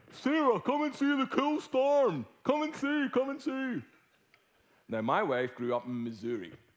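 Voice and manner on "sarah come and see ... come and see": put-on very high, carrying, calling-out yell. Speaker retelling calling his wife out to see a storm, retelling shouting. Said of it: "I start shouting at my wife".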